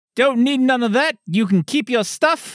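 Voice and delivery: put-on Australian accent. Asked what he's rolling, a player answers in an attempted Australian accent. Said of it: "this is my attempt at an Australian accent".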